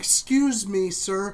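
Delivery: mock sweetly courteous, very nice, polite tone. Acting out confronting a driver stopped in the fast lane: mock polite voice. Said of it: "knock it very nice and polite".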